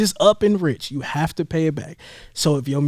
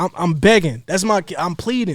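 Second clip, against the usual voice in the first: ordinary talk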